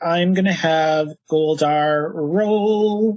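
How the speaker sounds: usual speaking voice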